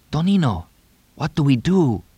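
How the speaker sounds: hushed. Narrator reads Tito's question to Tonino in a hushed voice. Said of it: "Tito asked in a hushed voice".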